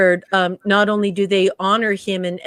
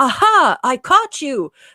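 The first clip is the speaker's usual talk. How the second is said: high, loud, triumphant crowing. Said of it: "have this moment where you're like".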